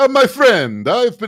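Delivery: high, loud, failed Italian accent drifting into Turkish.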